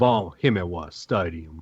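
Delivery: thick, deep, pure Southern drawl. Correcting someone's pronunciation, the speaker says the stadium name in a pure Southern drawl. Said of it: "You have to say it with a pure Southern drawl".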